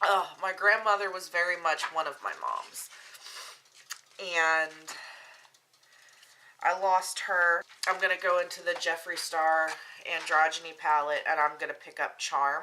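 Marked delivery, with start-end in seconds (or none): 0.0-7.6 fighting off crying mid-sentence, holding back tears. During a makeup video, speaking of a lost grandmother, holding back tears. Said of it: "I'm not going to cry".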